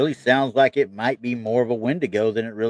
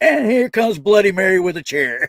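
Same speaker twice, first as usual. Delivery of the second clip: high, booming, hyped ring-announcer voice; 9 semitones higher, 6 dB louder than usual. Retelling a joke about summoning movie monsters, one guy's line in a WWE announcer voice. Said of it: "in his best W W E announcer voice".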